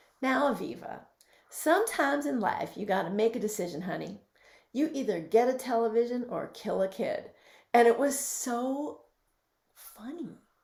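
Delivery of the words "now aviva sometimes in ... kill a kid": put-on heavy, laid-on-thick Southern Georgia accent. Quoting a funny woman's advice to the speaker, in a heavy Southern accent. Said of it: "She said in this heavy Southern accent".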